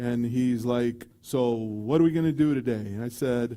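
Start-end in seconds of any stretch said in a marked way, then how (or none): 1.2-2.7 big, hearty, loud, boisterous doctor voice. Retelling a doctor greeting a patient before surgery: imitating a doctor's loud deep voice. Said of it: "has a loud, deep voice".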